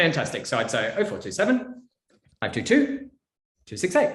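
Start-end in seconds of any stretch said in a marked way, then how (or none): 1.0-4.2 digit groups split by pauses, pitch up and down. Reading out a phone number aloud, pauses between the digit groups. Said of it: "You'd pause. ... I go up and down".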